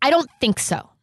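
rising anger. Imitating the woman being played as she gets angry: imitating her getting angry. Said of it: "She gets like this when she's, like, gonna be angry".

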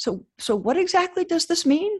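very high-pitched, hesitant, worried delivery. Retelling his mother breaking in about astronaut selection, imitating a hesitant, worried voice. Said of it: "in a little bit of a hesitant, worried voice says".

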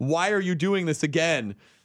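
acted, fed-up, exasperated, toned-down yell. Retelling yelling on the phone about the card, retelling a yell. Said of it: "But I was louder".

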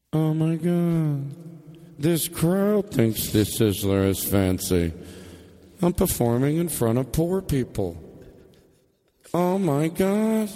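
private inner-thought voice with an echoing sound. Acting out a stage bit, speaking a private thought as if echoing. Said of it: "You're still talking into your microphone".

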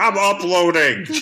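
put-on yelling like a talking toy voice box. Joking with the other speaker about a toy voice box, do its yelling toy voice. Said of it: "a voice box in yours that just yells about podcasting".

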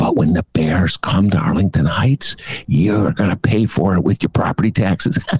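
voiced, conspiratorial, secret-sharing stage whisper. Warning the people of Arlington Heights about what the powers that be hide, half-whispering. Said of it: "I'm whispering it because the powers that be don't want you to know this".

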